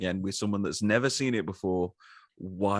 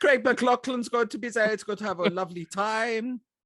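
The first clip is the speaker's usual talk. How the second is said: put-on Dutch-German accent voice, higher; 14 semitones higher than usual. Continuing the joke about the director's casting plans: bad Paul Verhoeven impression. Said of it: "some bad Verhoeven impression comes out".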